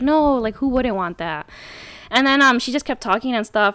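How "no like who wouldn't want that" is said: put-on sarcastic tone. Retelling a conversation, replaying own sarcastic reply to her. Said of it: "basically sarcastically".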